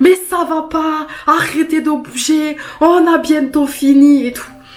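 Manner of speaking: put-on nurse voice scolding, high and slow. Retelling how a male nurse told her off during the scan: imitating a nurse scolding. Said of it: "Il m'a engueulée en me disant".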